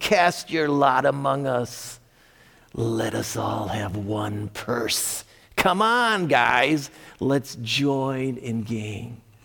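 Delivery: sly, sneaky, devious little voice, slow pace. Teaching on a scripture passage, voicing the enticers it quotes in a devious little voice. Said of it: "teach us with a little devious little voice".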